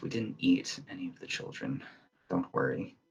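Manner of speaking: sighed out, soft, breathy and hushed. A woman answers people begging not to be eaten, sighing. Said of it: "the woman just kind of sighs".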